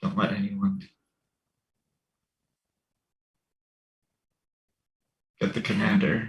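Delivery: quiet, hushed mutter under the breath. Warning two guards at a door in character: said under breath. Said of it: "under my breath to the two guards".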